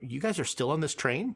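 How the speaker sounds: ordinary delivery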